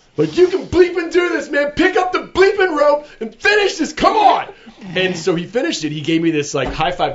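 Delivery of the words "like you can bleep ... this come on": wild, frantic, very high crazed screaming. Recalling urging someone in the gym to finish the workout, retelling screaming like a crazy person. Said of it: "I just started screaming like a crazy person".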